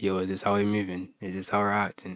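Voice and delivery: fake low, deepened put-on voice. Retelling what he said to her on the phone, put-on deep voice. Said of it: "I put on this deep voice and, ... let me show you guys how I did".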